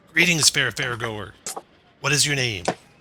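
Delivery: put-on aged, elderly goblin voice. Voicing a ticket-counter goblin who greets a fairgoer: elderly goblin voice. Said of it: "There's an elderly goblin perched behind the ticket counter".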